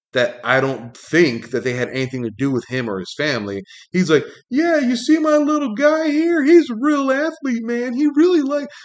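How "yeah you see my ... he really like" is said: very high, loud hollering yell. Retelling how a man yelled to the other parents, retelling a yell. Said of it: "he's like yelling to the other parents".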